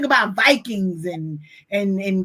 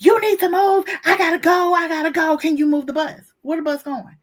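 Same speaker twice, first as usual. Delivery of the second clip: play-acted yelling, high-pitched, frantic, foolish; 7 semitones higher than usual. Retelling a woman stuck behind school buses, imitating a woman yelling. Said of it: "she's yelling".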